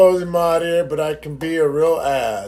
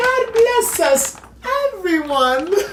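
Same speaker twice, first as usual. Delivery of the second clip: very high, squeaky, piping storybook voice. Discussing favorite British accents, the speaker does a Tiny Tim voice. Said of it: "I think of Tiny Tim".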